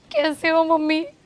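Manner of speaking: put-on tearful sobbing voice. Asking mom how she's doing in a staged bit, fake crying. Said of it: "तू ऐसे रोते रोते क्यों आ रही है".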